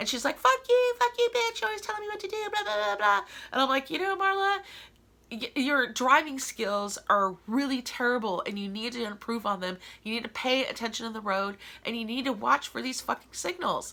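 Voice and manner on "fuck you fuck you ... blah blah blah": put-on very high, furious, screaming yelling rant. Retelling a car fight after the driver missed a stoplight: imitating Marla screaming. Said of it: "she was screaming and yelling at me".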